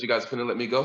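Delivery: plain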